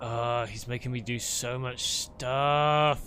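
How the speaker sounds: put-on groaning character voice. Answering a player's question, voicing the travelling companion's reply as a groan. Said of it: "just like a groaning".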